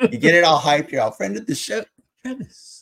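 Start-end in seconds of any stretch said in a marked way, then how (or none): 2.2-2.8 breathy, hushed, low, very quiet near-whisper. Mimicking how someone says the name: quiet, whispered 'travis'. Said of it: "It's like a quiet, just a whisper".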